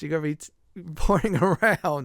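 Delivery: talking through laughter. Explaining the random teleporting from typing rub stone, laughing while talking. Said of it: "I'm sorry I'm laughing".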